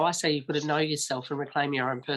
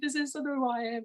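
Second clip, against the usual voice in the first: put-on yelling, higher pitch; 10 semitones higher, 4 dB quieter than usual. Retelling dropping to knees with no money: imitating own past yelling. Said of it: "I dropped to my knees and I'm yelling".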